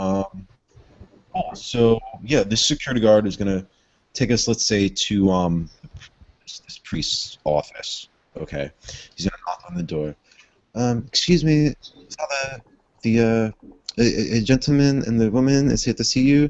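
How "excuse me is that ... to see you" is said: horrible, clumsy, fake French accent. Playing a security guard knocking on a priest's office door, horrible French accent. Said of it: "my horrible French accent".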